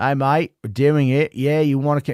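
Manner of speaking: put-on New Zealand accent that slides into Australian. Imagining Peter Jackson phoning Hugo Weaving: Australian-sounding Peter Jackson impression. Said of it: "That's more Australian".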